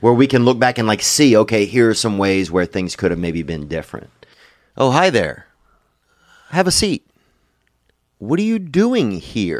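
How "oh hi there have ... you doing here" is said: show host voice with swooping pitch. Podcast host leads into an ad read with a Chris Hansen impersonation. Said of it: "That's just me doing my Chris Hansen impersonation".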